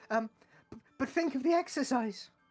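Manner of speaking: very high-pitched, stumbling, stammering voice. Retelling what Rudolph says to the group, in Rudolph's high voice. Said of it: "Rudolph's high voice".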